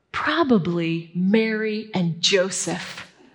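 pleased, self-important, proud tone with "Mary" drawn out. Retelling a kid answering his mom about his part: retelling a proud reply. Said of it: "he says proudly".

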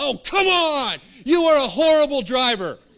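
shrill, explosive angry yell, very high and loud. Retelling a daughter's outburst from the back seat: imitating a child exploding in anger. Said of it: "explodes from the back seat".

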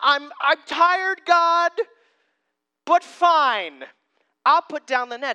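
acted grudging sarcasm, high, loud, "fine" dragged out. Retelling a reluctant reply to a teacher's order: imitating sarcastic Peter. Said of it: "the sarcasm in Peter's voice".

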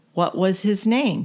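normal talking voice

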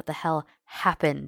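in anger. A man at her bedside asks what happened, angry. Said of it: "He's shaking his head angrily".

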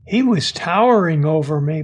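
ordinary delivery

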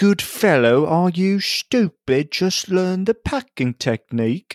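scornful, derisive put-on English accent, pitched high. Quoting how the english would mock pipe smokers, in a mockingly english accent. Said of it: "say the quotes in a mockingly English".

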